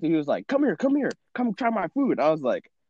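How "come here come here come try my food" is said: screaming, higher pitch. Retelling how a restaurant worker called people in: imitating a restaurant worker screaming. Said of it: "the guy was screaming".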